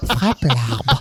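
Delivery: tiny, small, put-on little voice. Quoting a line from the film Kickboxer: imitating a small voice. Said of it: "avec sa petite voix".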